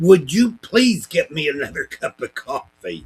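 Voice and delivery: very loud, high, swooping shout. Retelling asking a passing customer for more coffee: imitating own past yell. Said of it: "I took my cup and I yelled at her".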